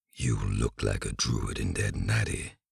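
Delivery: very low, rough, rumbling troll voice. Narrator reads the troll's remark to the harp player, in a rumbling troll voice. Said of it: "it rumbled after a while".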